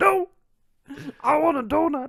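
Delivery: very high, loud, slow, drawn-out cry. Doing a joke impression for the other speaker: Marge Simpson impression. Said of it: "that was my Marge".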